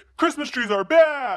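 stern, loud delivery.

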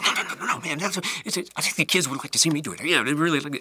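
mock super-fast, high, wired, eager pleading tone. Retelling what an actor would say before stunts: imitating someone hyper and energetic. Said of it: "He was just super fast, hyper all the time".

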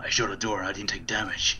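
gruff, roughened put-on voice. A player repeats the line just said, this time in a gruff voice. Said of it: "gruff voice".

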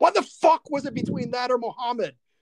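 genuinely angry outburst, pitched very high. Retelling a movie scene line: imitating someone genuinely angry. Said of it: "just genuinely angry".

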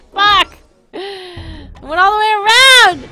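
furious, very loud, high-pitched mad outburst. Speaker blows up in the middle of a rant, mad outburst. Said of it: "I'm so mad right now!".

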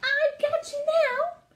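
excited little mouse squeak, very high, very slow. Narrator reading a little mouse playing a board game with another mouse, squeaking excitedly. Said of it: "squeaked Christopher Church Mouse excitedly".

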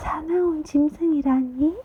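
startled, trembling, quavering high-pitched voice. Reading a startled character's question in a story, in a trembling voice. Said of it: "떨리는 목소리로 물었다".

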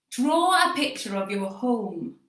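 put-on broad Yorkshire accent, laid on thick. Speaker retells what his school teacher told the class, in Mrs. Hilton's thick Yorkshire accent. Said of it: "in her thick Yorkshire accent".

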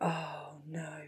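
breathed out very softly, dismayed.

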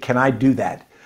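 ordinary talk

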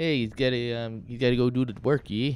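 terrible put-on Canadian accent. Speaker signs off to the guys: terrible canadian accent. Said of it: "There's my terrible Canadian accent".

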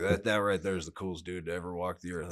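ordinary talk, nothing marked

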